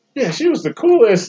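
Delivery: delighted, gushing, pitched way up.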